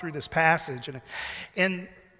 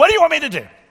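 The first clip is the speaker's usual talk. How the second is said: harsh, very loud delivery; 10 semitones higher, 12 dB louder than usual. A speaker shows how a quoted question could be heard, in a harsh tone. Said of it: "we can maybe hear that with a harsh tone".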